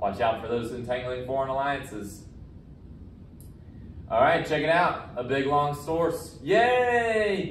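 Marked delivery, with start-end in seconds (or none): 6.4-7.5 high, sarcastic fake cheer. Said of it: "I'm being sarcastic today".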